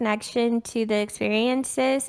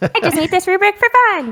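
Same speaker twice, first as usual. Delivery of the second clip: very loud, high, silly little put-on voice; 8 semitones higher, 9 dB louder than usual. Teasing another speaker about following his rubric: little voice imitating Adam. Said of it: "I did a little voice for no reason".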